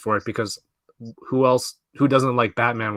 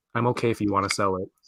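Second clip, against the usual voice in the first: mock deadpan, lower and quieter; 3 semitones lower, 6 dB quieter than usual. Retelling his five-year-old daughter's reply to the Squirrel Girl gift: imitating her deadpan. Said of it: "just like deadpan looks at me, and she goes".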